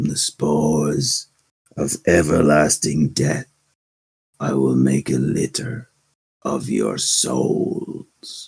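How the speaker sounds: ghostly, eerie, hushed whisper. Storyteller, just before ending the session, voices the mysterious voice speaking again: eerie whisper. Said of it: "The voice whispers again".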